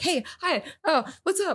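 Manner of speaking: put-on slow, very high, wobbly tipsy voice. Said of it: "you're literally wobbling".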